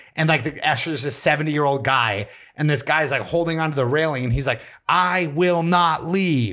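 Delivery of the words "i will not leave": mock very slow, stretched-out, pitched-up yell. Retelling how a man holding the railing refused to leave: imitating someone yelling. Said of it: "like, yelling it".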